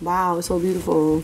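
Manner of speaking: put-on flat monotone voice. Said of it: "Marky be so monotone".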